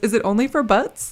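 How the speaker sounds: plain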